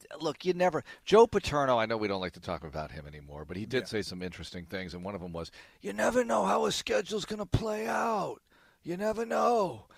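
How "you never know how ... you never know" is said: exaggerated, movie-style New York accent, very high-pitched. Quoting something Joe Paterno said, do him as a stereotypical Goodfellas New York guy. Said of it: "I'm doing like general Goodfellas stereotypical guy from New York impression here".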